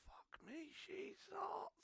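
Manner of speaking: muttering under breath. Speaker imagines remarking on a woman to companions, muttered under breath. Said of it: "under my breath quietly to them".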